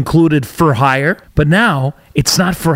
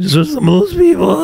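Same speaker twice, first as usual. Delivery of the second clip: cracking voice, higher; 8 semitones higher than usual. Starting a sensitive podcast topic, voice cracking. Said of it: "it's cracking".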